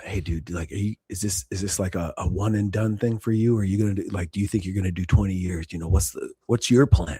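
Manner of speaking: mimicked whispering. Retelling a bunkmate's question in the dark, re-enacting a whisper. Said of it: "you're like whispering in the dark".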